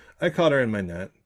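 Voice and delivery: loud, dead serious deadpan, no hint of joking.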